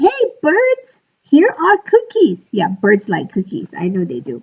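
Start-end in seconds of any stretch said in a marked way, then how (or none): 0.0-2.5 loud, very high-pitched hollering shout. Frog takes the box outside and calls to the birds, shouting loudly. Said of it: "He shouted in a loud voice".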